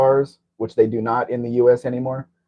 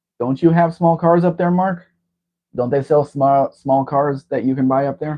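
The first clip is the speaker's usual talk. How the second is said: higher, louder raised voice. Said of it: "You don't have to raise your voice".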